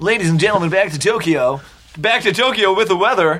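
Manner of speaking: radio announcer voice in a morning-show style. Steering the conversation back to Tokyo; radio announcer voice. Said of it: "I was doing like a radio voice".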